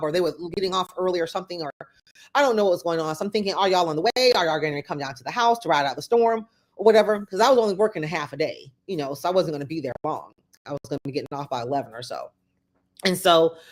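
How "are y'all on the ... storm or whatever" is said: ordinary talk, nothing marked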